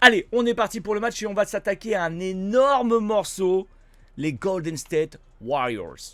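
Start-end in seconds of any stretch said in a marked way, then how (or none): 4.1-6.2 put-on speaks with American accent. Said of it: "J'aime bien l'accent".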